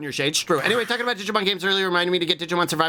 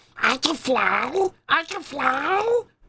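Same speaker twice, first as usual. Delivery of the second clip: put-on high baby voice with fly drawn out; 8 semitones higher than usual. Recounting a scene, the speaker imitates Steve Blum doing a baby voice. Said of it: "Steve Bloom doing a baby voice".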